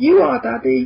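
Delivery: put-on very high small-child crying scream. Imagining a kid shouting a reply from upstairs, in a small child's voice screaming. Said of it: "like a little voice scream from upstairs".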